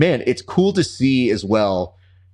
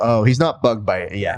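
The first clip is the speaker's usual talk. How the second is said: ordinary talk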